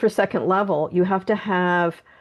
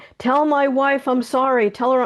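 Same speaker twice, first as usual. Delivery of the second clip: put-on yelling voice, pitched higher; 6 semitones higher than usual. Retelling a spirit's message during a Reiki session: imitating someone yelling. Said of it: "And he's yelling".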